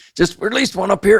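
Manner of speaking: effortful voice. Narrating a fish release during a fishing outing: strained voice. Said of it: "with my strained voice".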